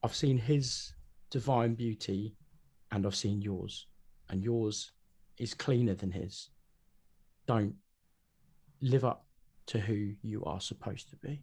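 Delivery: close, almost whispered voice. Speaker shows how to deliver a line close to someone's ear: almost half-whispering. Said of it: "you're like almost whispering in his ear".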